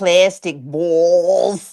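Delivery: put-on Boston accent. Repeating another speaker's words back to tease him: imitating a Boston accent. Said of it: "his Boston accent comes out".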